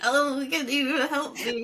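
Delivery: put-on voice of an elderly lady. Mocking the other speaker's story of asking for help, imitating an old lady. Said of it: "You're like an old lady".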